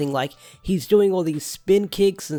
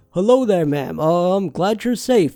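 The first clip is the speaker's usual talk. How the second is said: bad, clumsy put-on disguise voice; 2 semitones higher, 4 dB louder than usual. Fan retelling Ollie disguising his voice to his mum, in a really deep voice. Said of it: "talk in a really deep voice when speaking to his mum by going".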